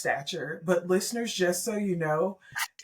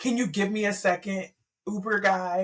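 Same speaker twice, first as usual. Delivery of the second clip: tearful, crying pleading voice. Retelling asking the driver to wait during an emotional scene: imitating own crying plea. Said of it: "I'm just crying".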